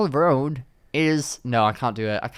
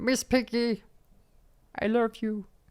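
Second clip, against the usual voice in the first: voice pitched way up, taken slowly; 10 semitones higher, 3 dB quieter than usual. Asked by a co-host to say something as Kermit the Frog: Kermit the Frog voice. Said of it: "Tell me something to say".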